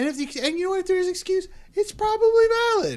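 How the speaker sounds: voice pushed up loud. Arguing that a player's excuse is probably valid: raised, louder high voice. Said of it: "I have to get my voice up this loud".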